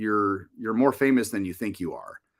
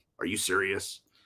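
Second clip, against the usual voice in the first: put-on woman's voice, much quieter; 4 semitones lower, 8 dB quieter than usual. Retelling her reaction to hearing it ran an hour and a half, imitating her voice. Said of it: "Why do you do my voice like that?".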